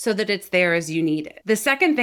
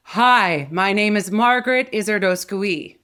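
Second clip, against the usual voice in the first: slow, loud voice projected back and wide; 3 dB louder than usual. Showing a learner how to send sound back and wide: louder, projected voice. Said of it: "Do you hear how much louder my sound just got?".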